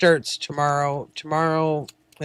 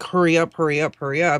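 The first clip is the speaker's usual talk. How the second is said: usual speaking voice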